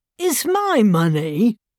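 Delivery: protesting, objecting, pushing-back tone. Jude speaks to a customs officer, protesting. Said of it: "protested Jude".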